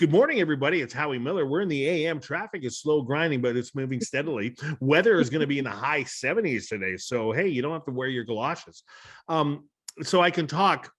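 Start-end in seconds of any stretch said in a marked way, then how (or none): 0.0-8.8 morning-show radio DJ announcer voice. Speaker showing how they can sound, in a radio dj voice. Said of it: "I can have a D J voice".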